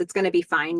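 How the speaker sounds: ordinary delivery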